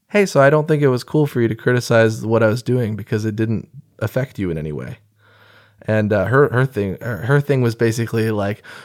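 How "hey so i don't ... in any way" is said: normal talking voice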